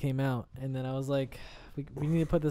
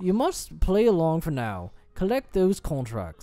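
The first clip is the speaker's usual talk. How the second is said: put-on English accent, higher; 3 semitones higher than usual. Speaker switches into a character's lines during play, english accent. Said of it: "I just went from weird to English".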